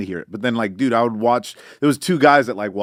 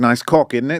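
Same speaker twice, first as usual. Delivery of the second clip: imitated English girl's accent. Showing the kind of English girl's accent he loves: imitating an English girl's accent. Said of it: "an English girl's accent".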